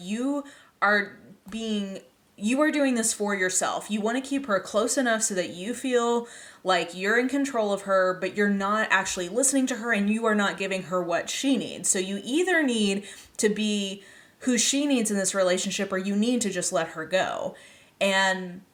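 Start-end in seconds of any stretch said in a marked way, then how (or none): none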